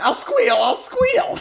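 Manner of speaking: very high, loud, cartoonish villain voice. Acting out a captured villain giving in instantly: cartoon villain voice. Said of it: "like a cartoon villain".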